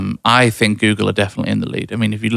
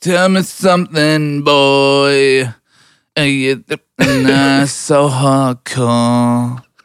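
put-on English musician voice, higher; 4 semitones higher than usual. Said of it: "that's my [name] impression".

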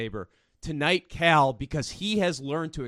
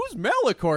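put-on very high, puzzled, clueless child voice; 10 semitones higher, 4 dB louder than usual. Mocking a character's question about a planet: Ezra impression. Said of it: "I love how Ezra's like".

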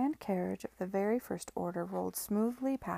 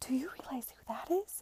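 high, hissing whisper under the breath; 5 semitones higher than usual. A woman elbows her brother to ask about someone she has spotted, hissed. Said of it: "she hissed".

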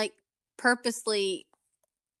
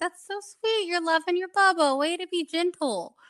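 sweet, high motherly voice. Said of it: "they get the mom voice".

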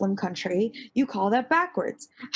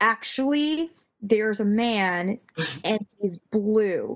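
normal talking voice

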